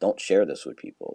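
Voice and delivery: whispered speech. Retelling how a classmate leaned in with a secret: imitating a whisper. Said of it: "whispering to me".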